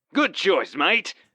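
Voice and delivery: abrupt, bright, very high cheery tone. A man replies after another agrees to join him, in a suddenly cheery tone. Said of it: "in a suddenly cheery tone".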